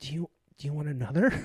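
mimicked pained tone. Speaker retells what a man asked them, imitating a pained voice. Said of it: "with pain in his voice".

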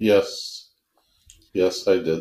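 extremely heavy, thick put-on Russian accent. Answering a question about food and water use: extremely Russian accent. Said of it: "Sigurd became extremely Russian".

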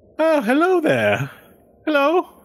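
very high, swooping, sing-song elf voice. Voicing an elf greeting the players on the road: voicing an elf character. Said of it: "he looks to, at you guys, and he says".

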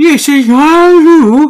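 put-on unenunciated, unclear delivery. Quoting an assistant's line from the movie: Cloris Leachman impression, swallowed word edges. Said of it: "she doesn't enunciate the beginning or ends of the words".

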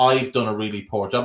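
ordinary talk

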